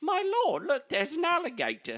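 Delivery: very high, swooping period-drama British accent. A show host tries an alternative to his usual old hick voice: Downton Abbey voice. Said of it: "Downton Abbey".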